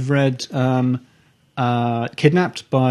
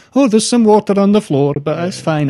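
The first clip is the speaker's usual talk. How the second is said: bad put-on Scottish accent, high and loud; 7 semitones higher, 5 dB louder than usual. Quoting people in flooding old stone houses, in a terrible scottish accent. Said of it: "I've done a terrible Scottish accent there".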